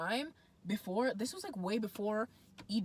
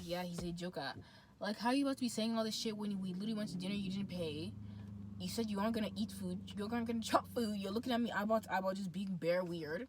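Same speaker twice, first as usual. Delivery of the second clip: ordinary talk, nothing marked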